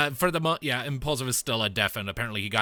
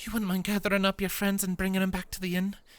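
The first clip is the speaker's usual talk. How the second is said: hushed whisper, much higher and faster; 9 semitones higher than usual. Game master as Jenni, approaching two companions, in a hushed whisper. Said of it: "actually hushed whispers".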